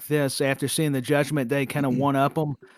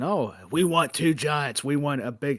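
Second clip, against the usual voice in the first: bossy, commanding executive voice. Imitating the boss who wants two giants: Vince McMahon impersonation. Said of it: "now I'm getting into a Vince impersonation".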